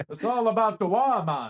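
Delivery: very loud put-on Jamaican accent, orc voice. Showing how to voice orc lines when reading them aloud, put-on orc accent. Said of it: "you could do it in either a Cockney accent or a Jamaican accent".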